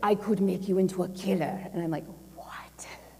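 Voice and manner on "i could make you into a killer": put-on Russian accent. Speaker quotes a man at a 2 a.m. breakfast, in a Russian accent. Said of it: "forgive my Russian accent".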